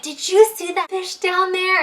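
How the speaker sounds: acted, beaming, high-pitched, through a huge grin. Retelling Dad coming up out of the water, imitating his big smile. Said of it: "he's got this huge smile on his face".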